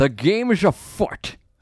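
slow, deliberate film-star voice, every word stretched. Moving the show on to the next segment: Sean Connery impression. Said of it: "as Sean Connery would say".

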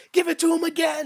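imitated yelling. Retelling watching a basketball game, screaming for the player: retelling own screaming. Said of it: "and I'm screaming at this point".

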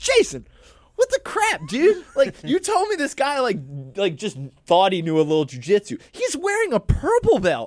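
acted hollering, high-pitched with swooping pitch. The speaker re-enacts what he yelled at someone, retelling his own yell. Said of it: "I'm yelling at Jason Colbert".

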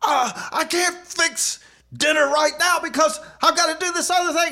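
irritable, snappy, very high-pitched barking tone. Retelling snapping at someone after too much coffee: imitating own snappy barking. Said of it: "I was barking at her".

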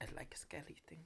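hushed, breathy whisper, all breath. Saying a catchphrase when asked to: Guillermo del Toro impression. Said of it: "say one of his classic catchphrases".

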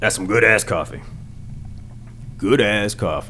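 macho, tough guy truck commercial voiceover. Showing the voice that truck and jeans commercials always use: tough guy voice. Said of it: "That's my tough guy voice".

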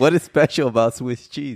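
suppressing laughter, straining to keep a straight voice. Reading a Google question aloud to the other speaker, trying not to laugh. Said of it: "It's because you're making me laugh".

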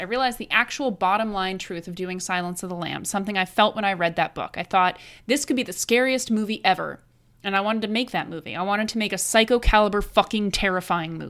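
plain

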